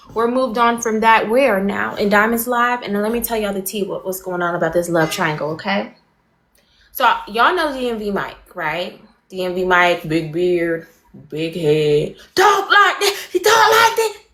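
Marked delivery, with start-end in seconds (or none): 12.4-14.1 very high, worked-up, heated man's voice. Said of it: "I don't know how to do a D M V accent".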